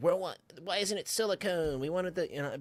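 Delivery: high, stupid, dumb put-on mocking voice. Quoting people's comments on Facebook, in a stupid mocking voice. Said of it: "that's just a stupid ass voice I do for everybody".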